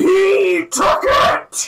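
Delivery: very high, very loud, furious, echoing wail. Describing an echoing voice the whole group hears, angry echoing voice. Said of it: "That was angry".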